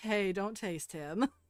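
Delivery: grumbling character voice, scolding tone. Voicing Venus who grumbles from behind a rag: grumbling Venus voice. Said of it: "you hear Venus sort of grumble from behind the rag".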